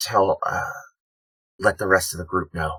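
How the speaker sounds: whispered in character. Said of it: "I'm just gonna whisper to Sapphire".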